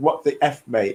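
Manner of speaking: plain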